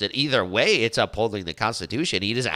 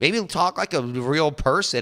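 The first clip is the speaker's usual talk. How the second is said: plain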